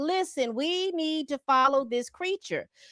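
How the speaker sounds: ordinary talk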